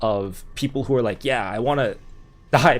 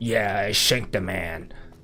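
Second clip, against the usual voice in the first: slow, hardened put-on New York accent; 5 semitones lower, 4 dB quieter than usual. Playing a hardened prisoner, New Yorker accent. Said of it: "would have a New Yorker accent".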